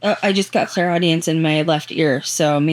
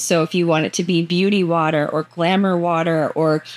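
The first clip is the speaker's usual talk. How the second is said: usual speaking voice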